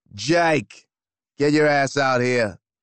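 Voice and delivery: loud, booming bellow at full chest. Reading a story, Moustache calls out to Jake, bellowing.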